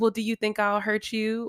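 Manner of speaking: mock sarcastic tone. Retelling what she says to him: imitating a sarcastic tone. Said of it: "she sarcastically goes".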